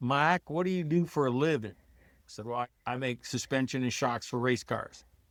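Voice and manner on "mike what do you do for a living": put-on real good-old-boy Southern accent. Retelling a coworker's question to him, in a real Southern voice. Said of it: "in a real Southern voice".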